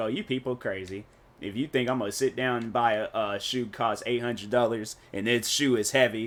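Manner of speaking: plain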